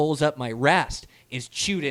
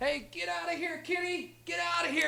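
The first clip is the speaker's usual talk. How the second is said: put-on very high, raspy, rough yell; 13 dB quieter than usual. Retelling scaring off a mountain lion at the tent: retelling a yell. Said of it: "here I'm yelling at him".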